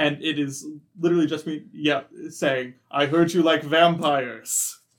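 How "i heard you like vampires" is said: magically booming, amplified voice. Speaking in character to a crowd of kids, magically booming voice. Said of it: "I use my thaumaturgy to boom my voice".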